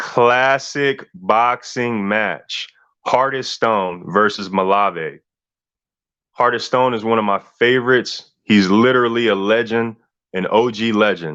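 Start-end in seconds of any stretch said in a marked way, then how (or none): 0.0-2.7 slightly slower, deliberate pace. Repeating the name of a boxing match for emphasis: a little slower. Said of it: "I'ma say it a little slower".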